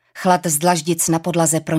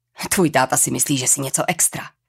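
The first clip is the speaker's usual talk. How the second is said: plain reading voice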